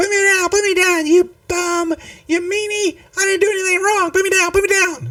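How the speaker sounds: very high-pitched, loud tiny creature voice. Voicing a tiny creature that is being held up, very high-pitched voice. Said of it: "going in a very high pitched voice".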